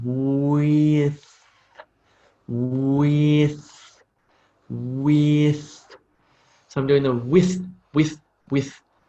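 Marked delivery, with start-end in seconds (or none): 0.0-5.9 slow, stretched with, every sound pronounced. Showing a learner the mouth movements: pronouncing "with" very slowly. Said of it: "pronounce the word with very slowly".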